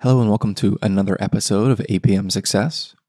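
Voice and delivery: speaking in hushed tones. A podcast host opening an episode with a baby sleeping upstairs, hushed quiet voice. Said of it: "I'm speaking in hushed tones".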